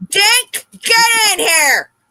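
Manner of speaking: shrill, very loud, high yell. Calling a dog inside during a podcast: yelling at the dogs. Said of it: "So we're just gonna yell at the dogs now".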